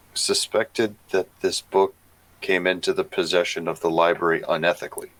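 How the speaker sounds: quiet, confidential tone. Speaker deliberately drops the voice mid-sentence: lowered, hushed voice. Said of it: "I'm going to very intentionally lower my voice".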